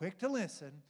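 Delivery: big, staged, dramatic, theatrical emphasis. Showing a phrase from James to remember, dramatic delivery. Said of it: "use some dramatic language here to help".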